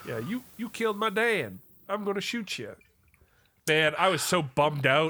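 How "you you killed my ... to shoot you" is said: yelled out, pitched high. Quoting a game character's line about his dad: imitating Jack Marston yelling. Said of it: "yelling out".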